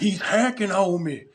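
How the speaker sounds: put-on high-pitched grandpa voice. Retelling what an opponent said after being killed, imitating a really old man. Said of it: "He sounded like a really old man too".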